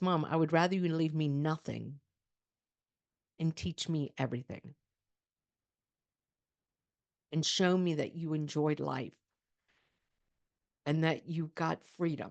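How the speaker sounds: emotional, choked-up voice, catching with feeling. Quoting what a daughter now says about an inheritance: getting emotional. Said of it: "I'm getting emotional".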